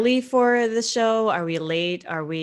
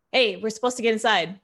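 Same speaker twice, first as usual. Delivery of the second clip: shouting, higher pitch; 4 semitones higher than usual. Playing a character yelling over to a bouncer: yelling to a bouncer. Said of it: "I'd like to try to yell over to the bouncer".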